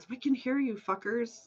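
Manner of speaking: loud stage whisper. Calling into the woods at hidden enemies: whisper-yelling. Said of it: "I'm gonna whisper yell into the woods".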